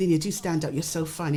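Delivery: ordinary talk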